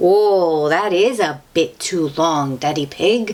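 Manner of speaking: ordinary delivery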